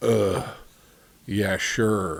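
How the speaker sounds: mock quiet muttering. Retelling a man in the front row commenting after every joke, imitating a quiet mutter. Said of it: "very quietly in the front row um".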